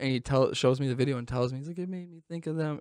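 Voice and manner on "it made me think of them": play-acted, high bawling sob through the words. Retelling what he said after showing the video: imitating someone bawling. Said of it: "Just bawling".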